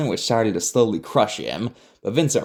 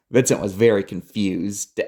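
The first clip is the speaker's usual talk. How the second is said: plain reading voice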